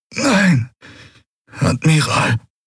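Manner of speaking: words groaned out in pain. Narrator reading the bleeding commander answering the admiral: groaning. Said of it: "ächzte Quailur".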